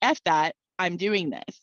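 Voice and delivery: put-on brash, young, sassy, defiant delivery. Recalling arguing back at a voice at twenty-one, retelling own sassy defiance. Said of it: "being the sassy 21-year-old that I was".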